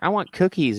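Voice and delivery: put-on tiny five-year-old voice, pitched way up. Imagining a five-year-old in the back seat asking: imitating a five-year-old kid. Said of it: "fucking five, and he's like".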